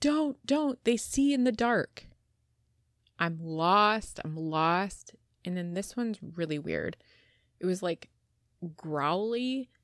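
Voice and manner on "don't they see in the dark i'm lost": mock dramatic yelling, much higher pitch. Retelling what a man said, retelling a dramatic yell. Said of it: "he was also yelling, like, kind of dramatically".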